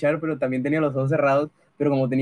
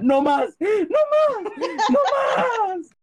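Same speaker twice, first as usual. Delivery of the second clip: very high, very slow, rising, drawn-out yell. Telling how they covered their ears beside their mother, retelling a yell. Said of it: "me tapaba los oídos y gritaba".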